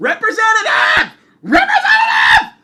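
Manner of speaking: angry screaming, very loud, very high, shrill, repeated. Retelling yelling at a phone menu at a store desk, retelling screaming into the phone. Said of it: "I'm screaming into the phone".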